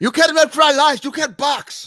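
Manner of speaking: very high voice, done badly. Joking about an imagined boxing match: bad Uncle Roger impression. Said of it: "my really bad Uncle Roger impression".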